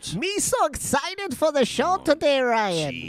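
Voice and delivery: very high, pushed-up sci-fi alien creature voice. Opening the show with a Jar Jar Binks impression. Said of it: "That was a pretty good impression".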